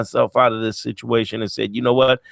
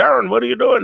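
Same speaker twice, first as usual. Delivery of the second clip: put-on Canadian voice, much higher and faster. Speaker recalls Bob Proctor greeting him by name, in a cool Bob Proctor Canadian voice. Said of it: "That cool Bob Proctory Canadian voice".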